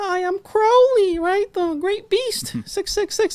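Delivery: voice pushed way up high. Acting out Crowley near the end of his life, high-pitched Crowley voice. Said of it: "high pitched voice".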